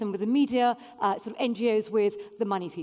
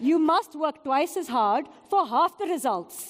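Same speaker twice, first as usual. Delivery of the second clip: put-on Pakistani accent; 4 semitones higher, 4 dB louder than usual. Quoting advice from an immigrant father from Pakistan; imitating dad's Pakistani accent. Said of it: "Should I do the accent? Okay".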